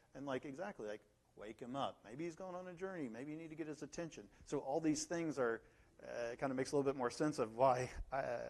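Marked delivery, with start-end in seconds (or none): 1.3-4.2 sarcastic, goading, mocking jeer. Retelling Elijah's words to the prophets of Baal: imitating Elijah mocking. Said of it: "he said mockingly to them".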